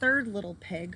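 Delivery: plain reading voice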